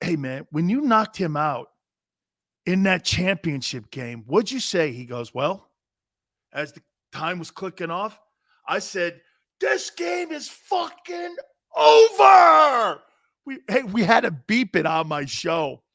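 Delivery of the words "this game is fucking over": very loud, shrill, high, drawn-out scream. Retelling what he said as the time was clicking off, screamed. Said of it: "he screamed it like that".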